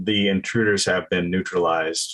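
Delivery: level, flat, toneless guard monotone. Imitating the guards, speaking into the phone: flat monotone. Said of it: "I try to imitate ... the monotone of the guards".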